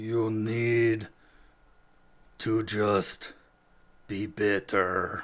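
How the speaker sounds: very slow vampire drawl with need stretched long. Performing a line after being asked for a Nosferatu voice. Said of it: "give us your best Nosferatu".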